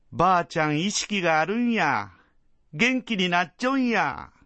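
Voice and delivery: high, bouncy, lively excited voice. Sumire speaks up in a bouncy, excited voice. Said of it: "すみれの弾んだ声が".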